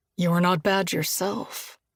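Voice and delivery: husky voice. Reading a scene aloud, a character answering a kiss: husky voice. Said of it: "Josh returns in a husky voice".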